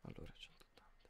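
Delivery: unvoiced whisper.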